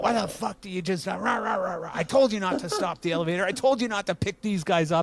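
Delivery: high-pitched, acted-out, angry, cutting rant. Retelling an elevator mishap where he yelled at a girl: imitating Dave's angry rant. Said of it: "he's just ripping on this girl".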